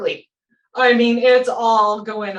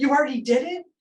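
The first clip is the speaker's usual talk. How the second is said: put-on tears gone, calm, puzzled, surprised child's voice; 4 semitones higher, 4 dB quieter than usual. Retelling a boy's reaction after his shot, imitating a suddenly calm child. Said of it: "No tears, no nothing. It just turned off".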